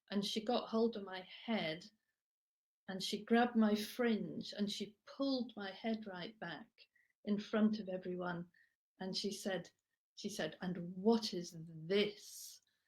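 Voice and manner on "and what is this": mock voice dripping with disgust, revolted. Recalling being grabbed by the fringe in front of everyone, the speaker mimics her: imitating a disgusted voice. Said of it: "the most disgust in her voice".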